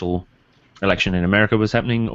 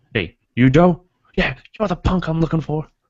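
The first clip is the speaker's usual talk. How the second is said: very high, clumsy, put-on American cop accent; 9 semitones higher than usual. Retelling a scene where a man pretends to be a cop, the speaker tries an American accent. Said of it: "I can't do the accent really well because I'm not American".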